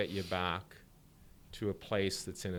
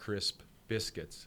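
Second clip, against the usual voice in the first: slow, steady, crisp, trained pace. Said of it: "at a pace that you're trained to do it at".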